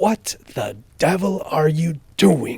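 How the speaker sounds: forced out between clenched, gritted teeth. Narrator reads the uncle bursting into his nephew's room, through gritted teeth. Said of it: "said Uncle Vernon through gritted teeth".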